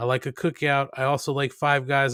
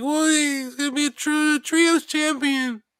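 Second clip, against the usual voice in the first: very high voice, slow, words drawn out; 13 semitones higher than usual. Imitating a co-host's answer: imitating Kate's high voice. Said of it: "Kate would come in with her high voice".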